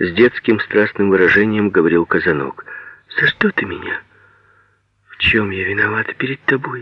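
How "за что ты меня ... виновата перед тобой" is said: surprised, astonished. Reading a novel, a woman replies to a child, asking in surprise. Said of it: "Удивленно спрашивала она".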